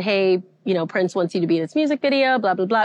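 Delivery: ordinary talk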